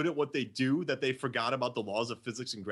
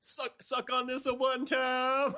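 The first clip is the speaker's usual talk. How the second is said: very high, drawn-out movie voice; 12 semitones higher than usual. Retelling a scene from In the Army Now: Pauly Shore impression. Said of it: "He's like".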